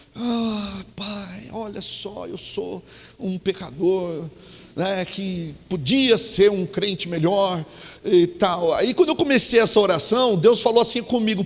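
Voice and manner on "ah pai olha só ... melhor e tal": acted soft, slow, downcast, sorrowful tone. Retelling own prayer while driving to church: imitating own saddened prayer tone. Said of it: "num tom assim, entristecido".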